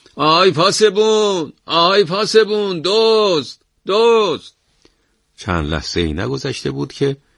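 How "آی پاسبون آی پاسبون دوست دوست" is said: shrill, very high, very slow drawn-out shout. A woman opens her door into the alley and shouts for help. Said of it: "فریاد زد".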